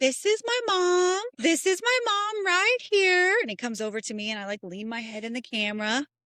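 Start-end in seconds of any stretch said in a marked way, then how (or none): 0.0-3.4 put-on very high, sweet little-boy voice. Mother retells her son filming with her phone, imitating his sweet little voice. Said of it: "Like his little sweet voice".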